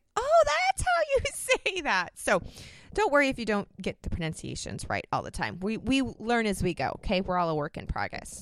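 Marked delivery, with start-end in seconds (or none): 0.1-2.1 very high, slow, squealing surprised exclamation. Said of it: "And I'm like".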